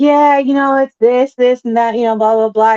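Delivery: flat, level, unchanging monotone drone. Speaker imitates how a man used to talk in interviews, monotone voice. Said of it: "it's just kind of a monotone kind of voice".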